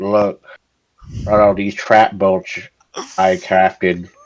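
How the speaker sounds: dead, low, flat, emotionless monotone. Mocking how he forced a joke into his video, mimicking a dead emotionless voice. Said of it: "with his dead emotionless voice".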